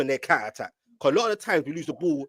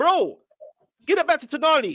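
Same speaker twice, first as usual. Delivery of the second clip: put-on very high, shouted, high-pitched voice; 14 semitones higher, 4 dB louder than usual. Retelling what he shouted at Barnes, retelling a shout. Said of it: "Then I was shouting at Barnes saying".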